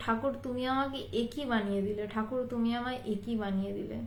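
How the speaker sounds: ordinary talk, nothing marked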